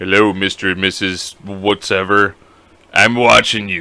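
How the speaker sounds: low, very slow, drawn-out badass tough-guy voice. Picturing a neighbor boy at the door, in a badass voice. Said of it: "a badass voice at eight years old".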